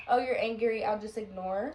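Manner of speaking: ordinary talk, nothing marked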